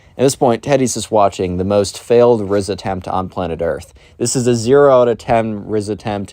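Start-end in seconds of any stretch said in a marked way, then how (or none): none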